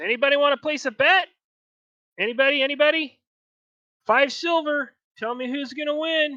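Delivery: high, shrill, blaring, very loud little goblin voice. Voicing a goblin as the ogre and the drow face off: little goblin voice. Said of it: "you hear the little goblin goes".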